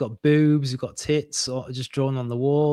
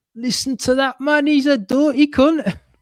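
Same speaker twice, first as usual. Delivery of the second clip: loud, very high put-on Geordie accent; 11 semitones higher, 6 dB louder than usual. Speaker jokes about a Rabelaisian character, trying a Geordie accent. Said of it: "I'm gonna try to do a Geordie accent".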